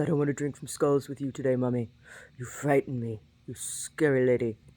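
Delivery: talking in a pet voice. Voicing the pet answering its owner, who calls it: voicing Brody the pet. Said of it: "He says".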